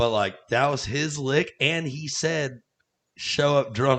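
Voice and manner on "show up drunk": fairly loud, offhand, tossed-off mumble. Retelling how another person first said the lick under his breath, imitating a mutter. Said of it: "under his breath".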